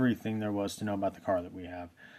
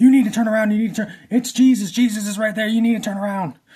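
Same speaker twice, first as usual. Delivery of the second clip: high, loud, freaking-out yell. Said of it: "she starts freaking out".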